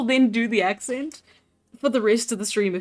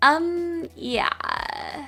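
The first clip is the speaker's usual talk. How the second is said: put-on Valley Girl accent, pitched up, yeah from back of tongue; 5 semitones higher, 4 dB quieter than usual. Showing the anchor phrase for doing accents: valley girl accent. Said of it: "with the Valley Girl, it's easy 'cause you go".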